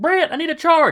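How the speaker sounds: very high, shrill shrieked yell. Voicing a character in a fight calling for a charge: yelling. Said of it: "he turns and yells".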